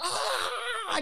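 high mock scream.

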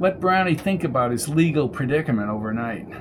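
usual speaking voice

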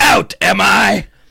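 high, loud, rough, shrieking villain voice. Joking with others, quoting the Spider-Man 1 villain in a Green Goblin voice. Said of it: "That's the Green Goblin".

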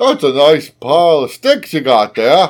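put-on Australian-sounding accent. Joking about the english, putting on an accent the other hears as australian. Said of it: "I was getting Australian".

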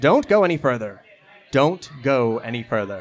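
echoing, ghostly voice ringing out. Voicing a Fae librarian dissolving into mist, warning them: echoing voice. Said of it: "kind of echoing out".

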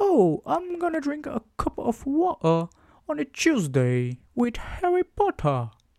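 overdone, forced British accent, very high, swooping pitch. Mocking how they sound speaking english, in a forced exaggerated british accent. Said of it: "sempre que eu tento falar assim com o acento britânico".

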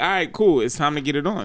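plain

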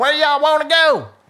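loud, very high, put-on drunk hillbilly voice. Retelling what a taxi driver said on pulling up: imitating a drunk hillbilly woman. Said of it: "this drunk hillbilly woman".

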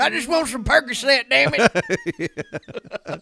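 very high, very loud, shrill, swooping, drawn-out complaining. Joining the retelling of essential oils for pain, imitating Mike complaining. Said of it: "Mike's all fucking can-".

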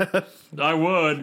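put-on voice, laughing while talking. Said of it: "Hoovy's laughing like".

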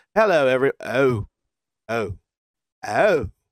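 put-on unhurried, slow British accent. Imitating Sean Ross Sapp getting news during a Q and A: British accent. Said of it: "you had a British accent".

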